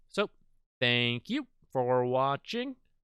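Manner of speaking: unhurried, slow, deliberate, drawn-out delivery. Closing a video and thanking viewers for watching, talking slowly. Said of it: "I don't know why I'm talking so slowly".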